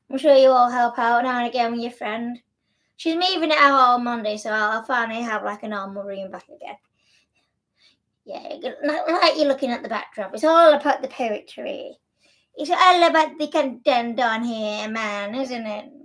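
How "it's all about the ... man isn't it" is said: weird, put-on Irish accent. Talking to viewers about the backdrop behind him, weird Irish accent. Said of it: "I just sounded like a really weird Irishman".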